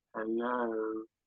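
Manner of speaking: deep, very low, muted, hushed, distracted and preoccupied voice. Describing phoning a rabbi, acting out the rabbi answering: imitating an interrupted, distracted rabbi. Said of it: "sound as though you kind of interrupted their deep".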